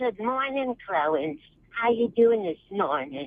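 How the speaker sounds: very high, sweet, eerie motherly voice. Showing the voice used with a pet terrier: Norman Bates's mother voice. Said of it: "sounds like you're doing Norman Bates, the mom".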